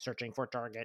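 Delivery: mechanical, robotic droid-like voice. Describing a large droid stomping around searching for target: droid voice. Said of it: "in that droid kind of voice".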